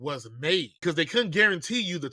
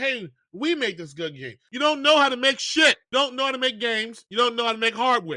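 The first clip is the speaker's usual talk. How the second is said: mock, high-pitched scolding yell; 8 semitones higher, 4 dB louder than usual. Speaker rants about companies buying up game studios, yelling like a parent at a child. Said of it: "You sound like a parent yelling at their child".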